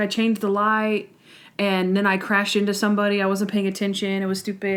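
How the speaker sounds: ordinary talk, nothing marked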